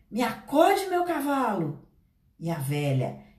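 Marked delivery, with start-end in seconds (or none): 0.2-1.9 loud, desperate shouting. Pedro, held by the old woman, calls to his horse, desperate shout. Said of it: "Desesperado, gritou".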